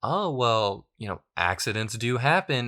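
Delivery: knowing, slow, swooping sarcastic brush-off. Describing how she sticks to her story, retelling her remark in mock sarcasm. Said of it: "she kind of says it in like a very sarcastic way".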